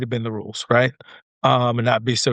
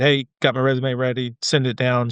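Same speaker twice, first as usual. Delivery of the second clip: ordinary talk, nothing marked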